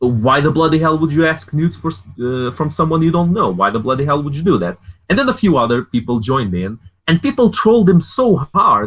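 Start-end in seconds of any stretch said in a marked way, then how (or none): 0.0-4.8 play-acted, mocking, scornful taunting tone. Retelling how they mocked a guy in a group chat: retelling own mocking taunt. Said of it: "We started making fun of him".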